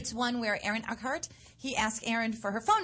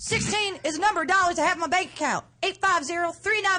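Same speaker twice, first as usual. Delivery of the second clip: loud, high, choppy, clipped, cut-off words; 7 semitones higher, 5 dB louder than usual. Reading a monologue after being asked to cut off the words, as if interrupted. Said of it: "Cut off the words as if you're being interrupted".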